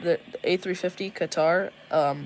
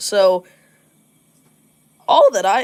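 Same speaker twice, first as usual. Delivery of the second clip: voice cracking, louder and slower; 4 semitones higher, 12 dB louder than usual. Showing viewers some older plane spottings, voice cracking. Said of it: "voice crack".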